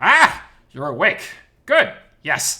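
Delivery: very loud, high, effortful, stuttering strange voice. A figure in the doorway addresses the waking narrator, stuttering with effort in an odd voice. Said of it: "He stutters this out with much effort in an odd voice".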